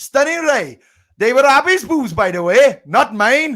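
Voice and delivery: attempted Welsh accent. Among friends, a speaker redoes a remark in an attempted Welsh accent. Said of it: "can I do this in a Welsh accent?".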